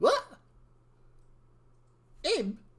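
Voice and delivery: high, loud disgusted scoff. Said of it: "Evie's just like".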